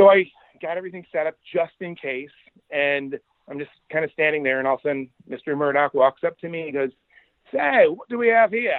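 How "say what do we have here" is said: nice put-on Australian accent, pitched up. Retelling what a visitor asked at a demo booth: imitating Rupert Murdoch's Australian accent. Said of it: "in his nice Australian accent".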